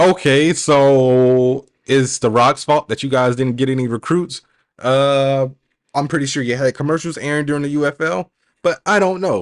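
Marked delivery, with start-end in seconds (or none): none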